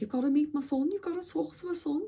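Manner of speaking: put-on high-pitched Scouse accent. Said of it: "sorry about that accent".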